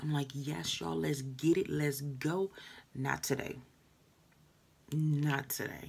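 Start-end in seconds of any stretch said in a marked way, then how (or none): 0.3-2.5 mock fired-up, pumped, excited hype voice. Showing how you usually greet viewers: imitating own pumped excited greeting. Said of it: "I'm pumped, I'm excited".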